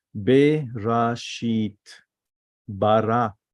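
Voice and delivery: slow, drawn-out, syllable-by-syllable Hebrew reading. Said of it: "the same word to pronounce it in a, in a different stages".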